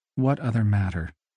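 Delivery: worn out, weary, tired voice. Byron, told there is another matter, replies wearily. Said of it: "Asked Byron wearily".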